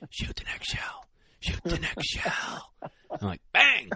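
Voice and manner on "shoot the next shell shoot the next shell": hushed, under-the-breath whisper. Retelling what he whispered to him about the next shell, retelling a whisper. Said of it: "And he whispered".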